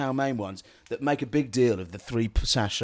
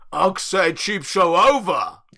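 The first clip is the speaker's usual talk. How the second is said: put-on caveman grunt-talk, loud and slow; 6 semitones higher, 7 dB louder than usual. Closing the show in a put-on character: caveman voice. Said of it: "It was a caveman".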